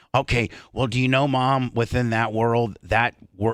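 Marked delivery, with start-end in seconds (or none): none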